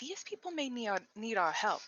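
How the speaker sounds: quiet, hushed speaking voice. A player, in character, turns to the rest of the party, speaking quietly. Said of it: "kind of quietly say".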